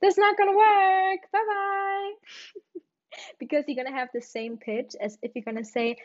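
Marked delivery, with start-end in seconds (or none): 0.0-2.1 mock, very high, loud, cheerful shriek. Retelling yelling after a friend leaving for her date, retelling a scream. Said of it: "I was screaming".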